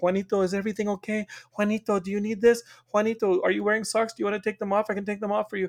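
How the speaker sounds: smothering, fussing, doting mom voice. Describing a woman who keeps coming in to check on him, imitating a fussing Mexican mom. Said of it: "like a like a Mexican mom who's like".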